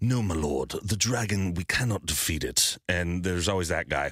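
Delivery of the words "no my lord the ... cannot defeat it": British accent in a fantasy-game style. Imitating a character from fantasy role-playing games: British fantasy accent. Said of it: "with British accents".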